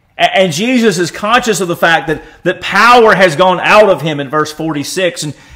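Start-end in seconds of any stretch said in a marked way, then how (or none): none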